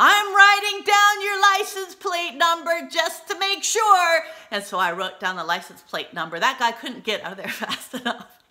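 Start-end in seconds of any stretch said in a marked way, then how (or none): 0.0-4.2 shrill, very loud, high-pitched yell. Re-enacting yelling at people getting into their car, retelling a yell. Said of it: "and I yelled".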